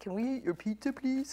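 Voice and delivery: clumsy, bad put-on men's voice. Retelling what the workers asked about the pizza: bad imitation of men speaking. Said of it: "I guess that was a bad imitation of men speaking".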